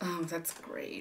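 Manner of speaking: sarcastic whisper under the breath. A host hears that Valentine's Day is Thursday and replies, sarcastic. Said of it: "I do not appreciate your sarcasm".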